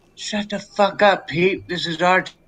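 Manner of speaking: whispering. Whispering back in character to Pete during a speech: whisper. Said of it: "I'm gonna whisper back to him".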